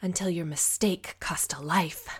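words hissed out loudly. Narrator reads her line as she bares her teeth at him, hissing. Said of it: "she hissed".

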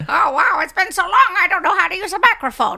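high-pitched, put-on elderly lady voice. Doing a voice for a co-speaker, in an old out-of-touch lady voice. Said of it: "What is this accent?".

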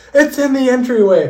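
shrill, ear-splitting, very high, very loud scream. Speaker retells what he heard in his AirPods as a man opened the door: retelling a scream. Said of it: "like in the loudest voice possible".

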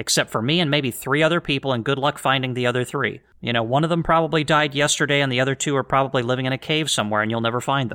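ordinary delivery

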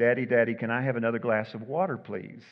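put-on meek, pleading child voice. Telling a joke, a little boy asks his dad: imitating a meek child asking. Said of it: "meekly said".

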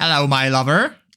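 Bristolian accent. Discussing an old chocolate company's history, the speaker slips into a Bristolian accent. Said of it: "pretty good Bristolian accent".

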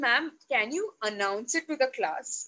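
plain

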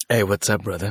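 suave, smooth put-on voice. Guest greets the host after a suave introduction, in a suave voice. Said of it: "you already sound suave".

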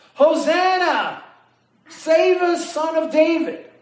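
high, ringing crowd yelling. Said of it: "everybody on the side of the road is yelling".

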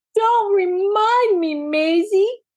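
crying out, pitched very high, drawn out. One twin answers the other after the culprits are caught, crying out. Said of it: "cried Daisy".

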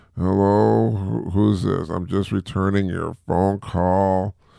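slow, groggy, just-woke-up half-asleep voice. Showing how one sounds on a call when half asleep: mock groggy voice. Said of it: "then I sound groggy like".

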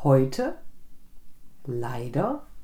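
first syllable stressed, each word set apart.

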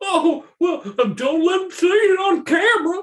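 put-on very high, squeaky, friendly, happily drunk voice. A player offers the mascot a drink; answer as Chunky, a friendly drunk. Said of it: "Chunky is probably the most friendly of the bunch. It seems like Chunky's a fun drunk".

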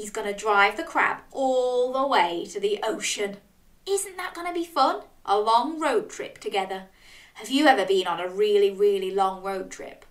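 plain

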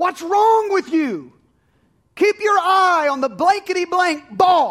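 screaming at full volume, shrill, furious, pitched way up. Retelling an overzealous father at his son's game: imitating a father yelling. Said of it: "he starts yelling at his son".

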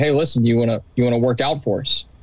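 ordinary talk, nothing marked

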